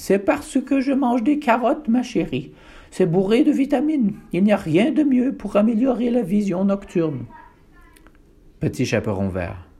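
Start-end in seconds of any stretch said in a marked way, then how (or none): 0.0-7.3 put-on loud, high-pitched old grandmother voice. Narrator reading the grandmother's answer to the girl in a fairy tale, louder in granny voice. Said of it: "plus fort avec la voix de mamie".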